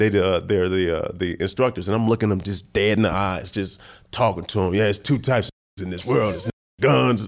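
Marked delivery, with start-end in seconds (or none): 4.7-7.3 put-on tough monologue voice, pitched higher. Retelling an audition monologue done as Ving Rhames impersonation. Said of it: "I just did my best Ving Rhames impersonation".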